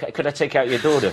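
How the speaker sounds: ordinary talk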